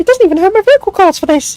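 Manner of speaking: very high squeaky voice. Speaker showing he can push his voice up without strain: squeaky high voice. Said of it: "I sound like a fucking squeaker".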